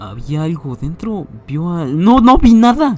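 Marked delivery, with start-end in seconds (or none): 2.0-3.0 sudden, very high, very loud, shrill shriek. Asked whether they saw anything inside, Billings answers with a sudden shriek. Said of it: "Chilló Billings de súbito".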